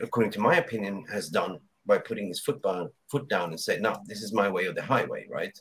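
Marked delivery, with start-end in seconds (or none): none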